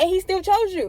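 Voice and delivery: forceful preacher delivery.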